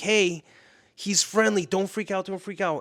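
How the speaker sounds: put-on loud, frantic, urgent scream. Retelling how the speaker screamed at strangers near the dog Raider: retelling screaming at strangers. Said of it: "So I'm like screaming at them".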